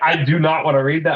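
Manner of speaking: put-on angry voice. Retelling a friend's refusal to read a passage: imitating Nico being mad. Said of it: "He was so mad".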